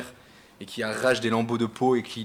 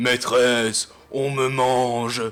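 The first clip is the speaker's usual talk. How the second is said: loud, cavernous creature voice; 5 dB louder than usual. Narrating a game scene, the narrator voices the fleeing creature in a cavernous creature voice. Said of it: "une voix caverneuse qui fait".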